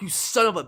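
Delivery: furious, very loud, high yell, cut short. Retelling a wrestling segment, imitating Roman Reigns yelling. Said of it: "Roman's yelling like".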